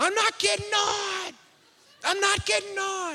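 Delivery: mock tearful, very high, crying child's scream. Retelling what a kid screamed before a ride, imitating a child screaming. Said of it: "he starts screaming".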